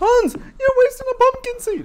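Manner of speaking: high, loud mock yell.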